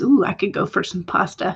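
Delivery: normal talking voice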